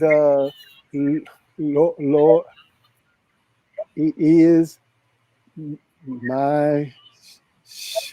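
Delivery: very slow, halting, nervous, stuttered reading. Retelling reading aloud in Sunday school as a child: imitating nervous stammered reading. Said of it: "I was nervous".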